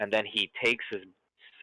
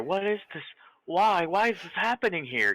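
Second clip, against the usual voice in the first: put-on, slightly effeminate, higher voice; 9 semitones higher than usual. Acting out what you hear the thing say, in a slightly effeminate voice. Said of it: "Kind of in a slightly effeminate voice".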